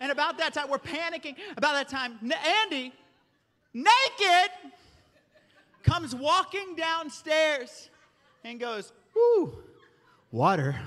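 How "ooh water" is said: confused, puzzled, low pitch with a swooping tune. Retelling a child walking down to a flooded floor, imitating confused child. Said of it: "Like he was confused about it".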